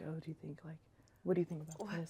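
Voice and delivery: mock whispering voice. Imitating parents talking together on recruit trips: imitating parents whispering. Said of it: "probably whispering".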